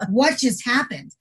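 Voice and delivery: ordinary talk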